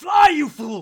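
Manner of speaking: very high, very loud, full-throated character yell. Narrating a character falling to the ground, then yelling in character. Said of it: "and he yells".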